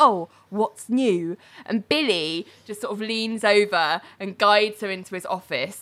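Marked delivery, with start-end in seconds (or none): 0.0-1.4 put-on resentful, catty, sniping tone. Retelling a reply to someone leaning in an office doorway: imitating a catty remark. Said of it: "cattily says to him".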